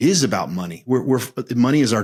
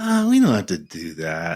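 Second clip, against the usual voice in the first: dismissive, offhand tone in a different timbre. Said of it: "There's a dismissive".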